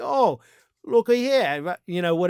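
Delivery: horrible, clumsy put-on British accent. Imagine a president mocking the UK Prime Minister after a meeting, in a horrible put-on British accent. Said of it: "I have a horrible British accent".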